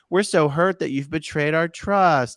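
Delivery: mocking, feigned wounded, hurt sincerity. Mocking a letter's writers who pose as friends: mocking fake hurt sincerity. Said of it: "someone who's trying to be like".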